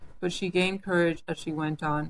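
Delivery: plain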